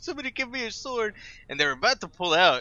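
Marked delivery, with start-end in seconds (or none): 0.0-1.1 very high, pitiful, pathetic pleading tone. Recounting a movie fight, acting out the loser's pathetic begging to the men around him. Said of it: "just begging".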